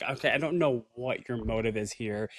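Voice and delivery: normal talking voice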